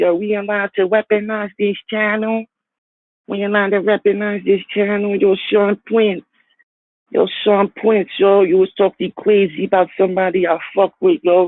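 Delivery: thin, little, squeaky, high-pitched mocking voice. Mocking a rival's way of talking: imitating a squeaky voice. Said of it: "got him sounding like that".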